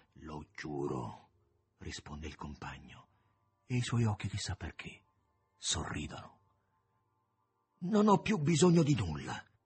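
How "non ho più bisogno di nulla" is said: drained, worn-out shout, high and loud. The narrator voices the man in the cloak as he rises toward the moon: exhausted shout. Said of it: "grida con voce esausta".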